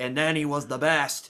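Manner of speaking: put-on very strong English accent, laid on thick. Quoting a line from the movie: imitating Gary Oldman's very British accent. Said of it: "Gary Oldman with a very British accent".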